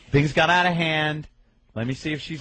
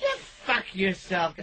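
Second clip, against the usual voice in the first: put-on high, tipsy, drunken girl voice, arguing; 6 semitones higher, 4 dB quieter than usual. Retelling how a girl argued after four hours of drinking: imitating a drunk girl arguing. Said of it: "this girl would get a little intoxicated".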